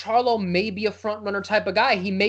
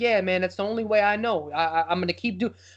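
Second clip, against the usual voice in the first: put-on, down-on-himself, beaten, dejected tone. Recounting a clip, the speaker quotes Jermell answering Mayweather's right-hand man: imitating Jermell sounding down. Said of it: "But he sounded like so down on himself".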